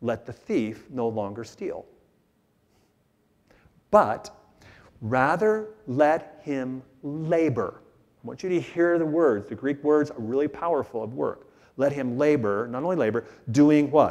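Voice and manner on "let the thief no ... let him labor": very slow, deliberate, word-by-word reading aloud. Reading a verse from Ephesians aloud to listeners, reading slowly. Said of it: "I'm going to read it slow".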